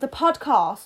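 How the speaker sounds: mock upper-class British accent.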